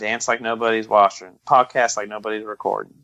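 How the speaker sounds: normal talking voice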